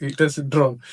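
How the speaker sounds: ordinary talk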